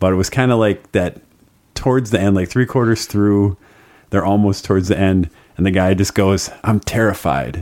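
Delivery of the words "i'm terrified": put-on excited man's voice. Retelling what a guy said near the end of the game: imitating an excited guy. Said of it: "an excited way".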